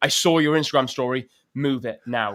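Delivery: put-on passionate, urgent, insistent voice allowing no argument. Retelling a late-night call from the gift giver, imitating a passionate demand. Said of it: "she's passionate about this".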